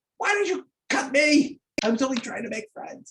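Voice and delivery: very high, shrieking ghoul-like monster wail. Voicing a wounded ghoul with its arm cut: ghoul screaming. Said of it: "It's just, like, screaming".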